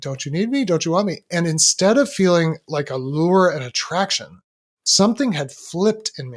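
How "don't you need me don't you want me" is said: tiny, fast voice sounding like it's from a phone. Recounting hearing the phone downstairs, little phone voice. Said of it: "I hear this little phone voice like".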